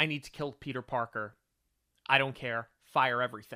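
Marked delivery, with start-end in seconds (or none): none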